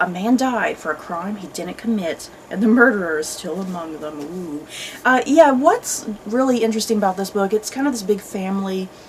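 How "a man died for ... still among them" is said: usual speaking voice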